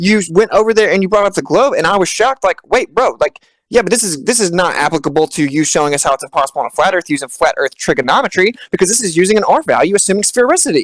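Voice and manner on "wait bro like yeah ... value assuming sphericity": ordinary talk, nothing marked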